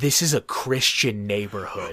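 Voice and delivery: put-on solemn, completely earnest, low, dead-serious delivery. Retelling a friend's joking remark in the car: imitating a dead-serious tone. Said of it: "it was so serious as he said it".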